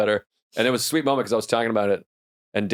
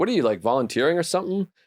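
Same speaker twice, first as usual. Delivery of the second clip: ordinary delivery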